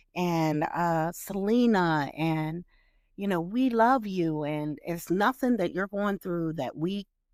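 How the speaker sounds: ordinary talk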